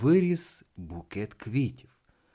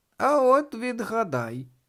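very high voice, giggling through the words; 10 semitones higher than usual. Answering a boy who asked who she is, giggling. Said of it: "захихотіла мала Баба Яга".

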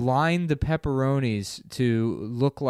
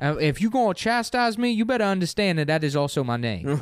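put-on older woman voice, pitched higher; 5 semitones higher than usual.

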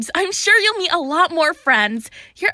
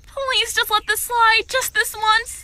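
begging, pleading, imploring tone; 2 semitones higher than usual. Defending a nervous girl after a problem with the magic, begging.

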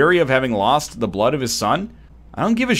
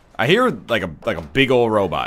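ordinary talk, nothing marked

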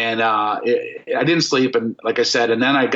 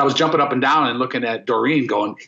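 normal talking voice

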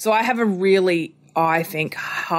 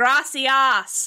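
put-on strong, high-pitched Australian accent like a little kid; 6 semitones higher than usual. Retelling a three-year-old's answer about school: strong australian accent. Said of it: "strong Australian accent".

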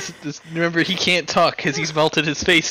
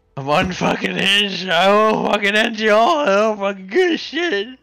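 slurred, mushy, garbled goblin mumble, pitched up; 5 semitones higher than usual. Narrating a role-play scene, voicing a fire goblin whose face has melted, garbled melted-face goblin voice. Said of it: "he can't talk because he's melted his face too many times with fire. ... I'm the biggest holy goblin of fire you ever seen".

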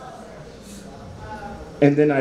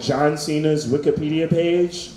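ordinary delivery

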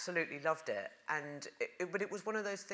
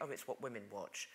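scornful, dismissive, sneering, acted out; 7 semitones lower, 10 dB quieter than usual. Retelling how soap was talked about: imitating a derogatory tone. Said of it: "it was always derogatory".

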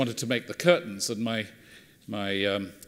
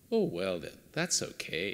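very quiet, lovely, sing-song Scottish lilt; 4 semitones lower, 10 dB quieter than usual. Retelling what a woman replied after a pause about curtains for rats: scottish lilt. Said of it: "in a lovely Scottish lilt".

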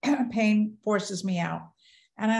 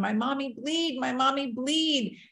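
put-on high, tearful little-child voice; 5 semitones higher than usual. Retelling the daughter's words after the crash: imitating a crying child. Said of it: "but my daughter is crying".

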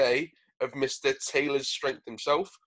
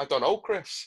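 put-on Liverpool Scouse accent; 4 dB quieter than usual. Imagining himself as a pundit answering chris, scouse accent impression. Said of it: "that was a decent impression".

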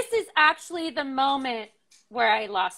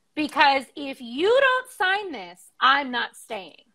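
put-on stern voice. Retelling answering a worried partner with pen in hand: retelling own stern voice. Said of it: "I got stern in my voice".

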